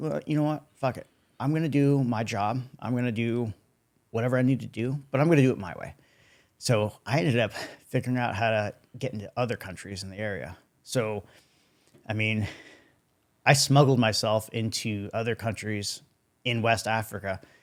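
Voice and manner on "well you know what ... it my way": mock furious, angry voice. Telling a story of being left somewhere, retelling furious words. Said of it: "I was furious".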